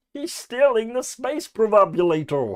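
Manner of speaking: bad, high cartoonish alien voice. Speaker speculating about a license suddenly does an awful Marvin the Martian impression. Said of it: "That was an awful impression".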